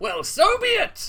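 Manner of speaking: mocking brute voice.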